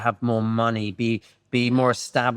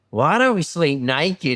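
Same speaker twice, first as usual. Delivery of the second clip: put-on Australian accent; 4 semitones higher than usual. Retelling what someone said getting into bed at night, Australian accent. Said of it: "all I hear in this Australian accent is".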